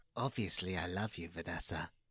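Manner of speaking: very low, deep, creeping voice. Asked for an impression, addressing Vanessa; Dominic Monaghan impression. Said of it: "he sound like he's creeping through a magic forest".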